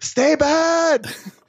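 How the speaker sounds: put-on high yelling. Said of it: "they're yelling".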